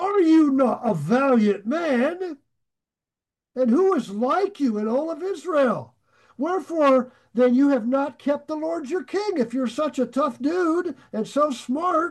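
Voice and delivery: put-on, scornful, needling, heavily sarcastic tone. Retelling how David spoke to Abner: retelling a very sarcastic taunt. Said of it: "very sarcastic".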